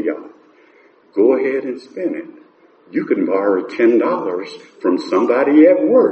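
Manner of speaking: low, quiet, calm delivery. Speaker retells what Earl would say to them, imitating Earl, quiet and calm. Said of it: "quietly and calmly".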